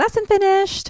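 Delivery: high put-on girl's voice, sing-song.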